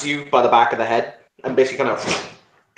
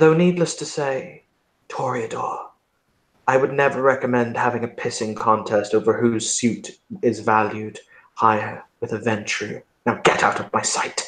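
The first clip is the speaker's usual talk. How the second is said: reflective, thoughtful, musing tone; 2 semitones lower, 4 dB quieter than usual. The narrator, as the prince, addresses the Toreador: musing. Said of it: "and he will muse".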